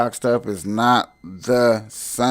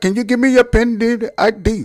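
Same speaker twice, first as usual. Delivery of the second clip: very high, loud, foreign-sounding voice; 12 semitones higher, 5 dB louder than usual. Acting out a phone repair call, as the agent answering, in foreign call-center agent voice. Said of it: "and you get a foreigner".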